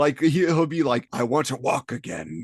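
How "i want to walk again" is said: put-on heartfelt, impassioned, passionate, earnest delivery. Retelling a character's lines after he discovers his suit: imitating passionate speech. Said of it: "he's much more passionate".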